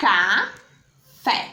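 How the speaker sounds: café with the stress on fé. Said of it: "qual foi a sílaba que pró pronunciou com mais força".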